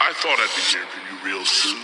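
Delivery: big booming voice, huge and very low. Setting the scene in a junkyard, voicing Big Fatso with a big booming voice. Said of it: "you hear this big booming voice".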